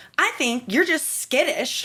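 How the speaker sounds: sassy, snarky tone. Retelling what a sassy guy in a line said: imitating a sassy guy. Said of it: "a real sassy, like, twenty-one-year-old guy".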